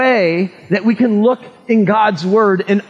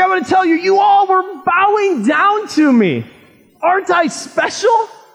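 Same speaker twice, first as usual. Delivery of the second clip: put-on excitement, much higher pitch, slower; 6 semitones higher than usual. Retelling the story of Joseph's dream, imitating Joseph getting excited. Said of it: "And he gets all excited".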